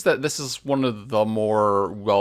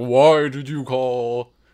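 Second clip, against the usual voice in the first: put-on male voice, much slower; 2 semitones higher, 4 dB louder than usual. Describing how the purple tanking ones would talk, in a distinctly male voice. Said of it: "it's a distinctly male voice that's like".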